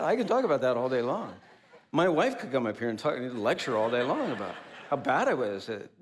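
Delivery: talking through laughter.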